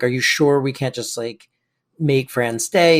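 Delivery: normal talking voice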